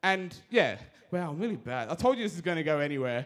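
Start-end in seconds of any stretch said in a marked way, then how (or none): 1.9-3.3 very fast, passionate rush of words. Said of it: "I'm, like, really talking real fast".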